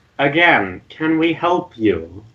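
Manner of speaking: slow, high, drawn-out, annoyed and angry.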